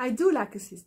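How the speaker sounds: DO stressed hard, with a laugh.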